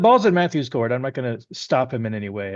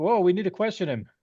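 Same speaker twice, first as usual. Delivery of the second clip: pitched-up calling out; 5 semitones higher than usual. In a roleplaying game, a player's character yelling out while Matthew attacks a man. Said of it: "I'm gonna yell out like".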